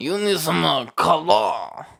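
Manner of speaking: put-on French accent. Joking about spelling honor with a U, bad French accent. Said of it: "I don't know if that was a French".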